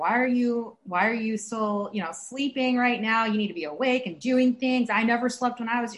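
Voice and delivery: ordinary talk, nothing marked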